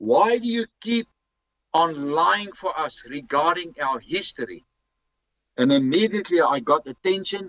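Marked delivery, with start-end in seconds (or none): 0.0-4.7 mock, pointed, emphatic accusing tone. Retelling what he said to the lady at reception in the foyer: retelling a very loud outburst. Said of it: "in a very loud voice".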